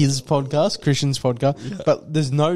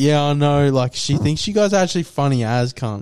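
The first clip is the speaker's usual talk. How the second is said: ordinary talk, nothing marked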